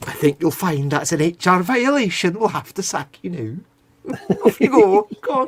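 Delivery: put-on Glasgow accent. Imitating a typical HR manager sacking someone, in a Glasgow accent. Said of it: "That's more of a Glasgow accent".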